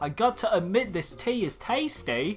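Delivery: put-on British accent. Playing a character in a shared story: British accent. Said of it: "getting a British accent".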